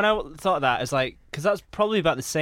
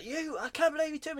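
very high-pitched, livid, furious outburst; 12 semitones higher, 8 dB quieter than usual. Retelling a scene where a man snaps at the woman who took him out: imitating a furious man. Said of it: "so he's furious".

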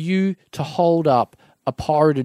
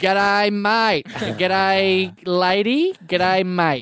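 put-on Australian accent, much higher pitch; 4 semitones higher than usual. Imitating people who parroted a visitor's accent back, put-on aussie accent. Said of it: "then put on your accent".

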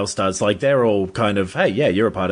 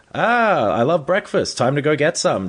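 upbeat, pitched-up, chirpy, enthusiastic delivery; 6 semitones higher than usual. Describing an actor's line delivery, imitating Peter Dinklage's breakfast-loving tone. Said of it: "he says it in this, like, very".

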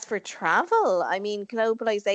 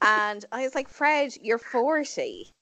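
usual speaking voice

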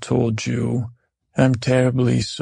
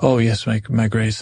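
ordinary talk

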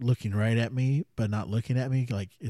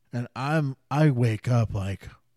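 ordinary talk, nothing marked

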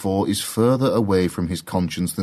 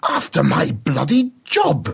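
high, swooping, drawn-out agitated cry; 6 semitones higher than usual. Professor Bradley cries out, agitated, while arguing with Rosie. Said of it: "cries Professor Bradley".

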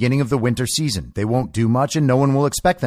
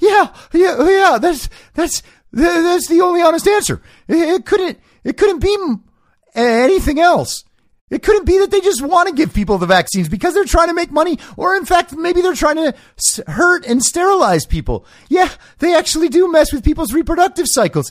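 very high-pitched, stumbling, stammering run-on voice; 4 dB louder than usual. Mocking a quoted claim about covid vaccines: Alex Berenson impression. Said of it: "That impression is spot on".

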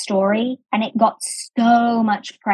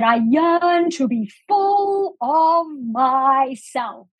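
slow, grand, sweeping, drawn-out delivery; 4 semitones higher than usual. Retelling what was said on stage: big booming Oprah voice. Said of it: "in that big booming voice of hers".

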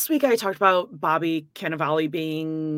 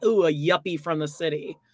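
ordinary talk, nothing marked

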